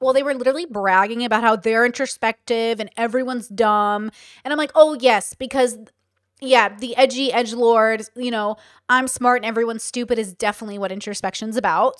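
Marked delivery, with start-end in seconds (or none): none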